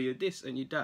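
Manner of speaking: plain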